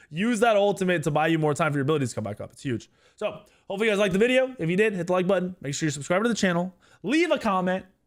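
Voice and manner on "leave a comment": insistent, high-pitched calling out. Asking viewers to like, subscribe and comment: yelling at viewers. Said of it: "Yes, I'm yelling at you".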